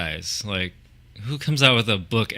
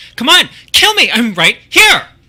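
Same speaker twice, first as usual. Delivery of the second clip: put-on shrill, very high, very loud girl voice; 14 dB louder than usual. Doing a voice for the other speaker to guess, imitating a girl. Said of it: "I'm doing a girl".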